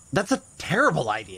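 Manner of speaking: held-back, mild shout. Rejecting a companion's suggestion to split up while hunting worms: shouting. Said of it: "You don't have to shout".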